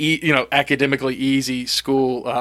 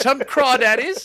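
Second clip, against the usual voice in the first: put-on old-time South Carolina accent, pitched higher; 11 semitones higher than usual. Imitating a coach who was a guest on the show: imitating Fisher DeBerry's South Carolina accent. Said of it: "best old time, like, South Carolina accent".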